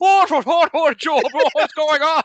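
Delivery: put-on loud, very high, shouted drunken Irish accent. Acting out Terry, a drunken Irish mate, calling to Job, in a drunken Irish Terry voice. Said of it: "a drunken Irish mate is going".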